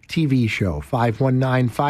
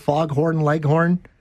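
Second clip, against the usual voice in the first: ordinary delivery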